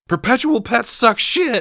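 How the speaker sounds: very high, very loud, shrill screeching outburst. Recapping a scene where Katie screams at Gemma, retelling a scream. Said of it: "she screams".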